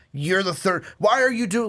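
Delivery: heated screaming. Imitating another speaker's earlier rant about a player: imitating someone screaming heatedly. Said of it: "screaming and getting pretty heated".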